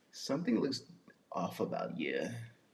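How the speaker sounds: very low, very quiet, swooping woman's voice. Retelling what his woman says when he walks in: imitating Chanel T's voice. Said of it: "That's how she talk".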